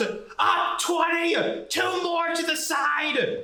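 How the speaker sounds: acted, very high, barked-out yelling. Telling a story, retelling what a guy yelled out, retelling a yell. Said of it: "the guy yells out".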